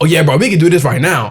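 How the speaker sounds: mock angry, heated, worked-up, fired-up voice. Retelling meeting the man coming out of the liquor store: retelling heated words. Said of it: "I'm, like, heated though".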